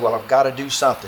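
ordinary delivery

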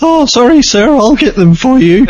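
high, loud nerdy voice.

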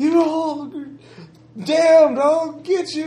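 put-on incoherent, high, drawn-out drunken yelling. Describing a drunk farm boy fresh off the farm, drunken yelling. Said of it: "he's yelling at something like".

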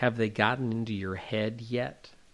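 secretive, hushed stage half-whisper. Retelling what a man leaned over and half-whispered to Buzz: imitating a half-whisper. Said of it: "he leans over and whispers".

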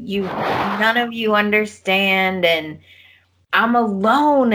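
slow, acted, tearful, crying, pleading lament. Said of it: "And she's just".

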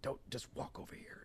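very quiet, hushed, barely voiced whisper. Retelling a film scene where a man in bed warns another: imitating someone whispering. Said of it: "he's trying to whisper".

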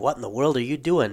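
ordinary delivery

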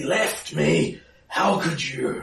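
weak, feeble, slow, high-pitched drawn-out growl. Narrator voicing Bryn as she growls at you: Bryn's quiet, feeble growl. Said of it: "growls at you, but now quietly and feebly".

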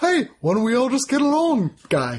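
put-on very high, swooping New Zealand accent. Quoting Korg, the giant rock monster guy in the film, with his New Zealand accent. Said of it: "with a New Zealand accent".

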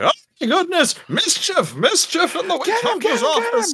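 shrill, very high, swooping panicked screaming. Game narrator voicing the headmaster after he gets bonked, screaming. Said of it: "it begins screaming".

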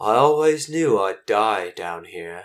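put-on elderly creature voice. Voicing an old bird elder who speaks to the players: old bird elder's voice. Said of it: "he says to you in common".

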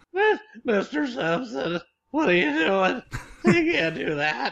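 put-on very high, squeaky teenager voice. Joking about an actor in a film: squeaky teen from The Simpsons voice. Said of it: "I'm the squeaky teen from The Simpsons".

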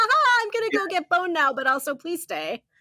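giggling through the words. Retelling how a girl was pulled away by a dude, imitating her giggling.

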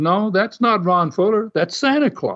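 cool, calm, unruffled, unbothered tone. Retelling how Les answered someone on air about Santa Claus, imitating his calm reply. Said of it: "he calmly answered him".

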